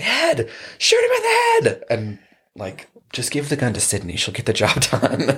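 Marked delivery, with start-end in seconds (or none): 0.0-1.8 very high, swooping, shrill shriek in the background. Describing a film scene where a woman in the background screams: retelling a scream. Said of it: "she's in the background, like, screaming".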